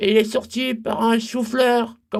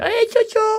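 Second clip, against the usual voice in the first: tiny, very high, little bird-like voice; 11 semitones higher than usual. Retelling what a small nephew said: imitating a little bird-like voice. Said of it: "il a pris une petite voix un petit peu comme un, un cucu, un petit oiseau".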